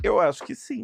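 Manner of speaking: mock very high, giggly voice through laughter. Retelling a man's answer to their question, retelling a laughing reply. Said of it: "rindo assim".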